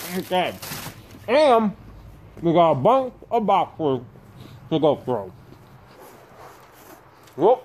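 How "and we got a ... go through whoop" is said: chewing, words muffled through a mouthful. Having found the cookies, starting on a pile of boxes, talking with mouth full. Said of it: "shouldn't speak with my mouth full".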